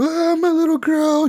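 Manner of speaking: very high-pitched, tearful crying voice. Retelling a game scene where police take a mother out of the house, imitating her crying. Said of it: "And she's like crying".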